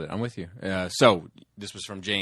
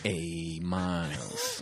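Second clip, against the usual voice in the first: swooping, sing-song character voice with wide pitch swings; 2 semitones lower, 6 dB quieter than usual. Doing a cartoon character's voice during a rapid-fire question round: Sly Rax voice. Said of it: "it's Sly Rax's voice".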